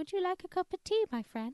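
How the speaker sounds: very high little mouse voice, squeaky. Mimicking how a female voice sounds, discussing it with another speaker: imitating a mousy voice. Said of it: "She's a bit of a mouse".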